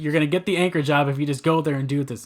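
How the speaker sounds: normal talking voice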